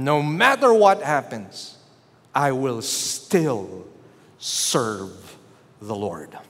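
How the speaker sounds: mock unshaken boldness, low and swooping. Retelling a brother rebuking a dark presence: imitating a bold rebuke. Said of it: "with all boldness".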